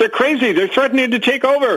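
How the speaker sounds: shrill, very high, terrified screaming. Retelling how a frightened priest ran off: imitating a priest screaming. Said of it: "And he was screaming".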